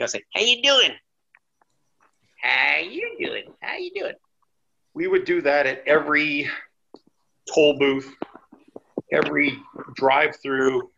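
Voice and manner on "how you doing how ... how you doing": put-on hillbilly voice, very high-pitched and swooping. Speaker shows the voice they used greeting people at toll booths: hillbilly voice. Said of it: "you gotta put on the hillbilly voice".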